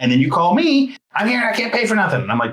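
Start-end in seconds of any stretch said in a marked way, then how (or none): 1.1-2.2 high, yelling outburst. Retelling a phone call where the other speaker couldn't pay: imitating someone yelling. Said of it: "Then why are you yelling at me?".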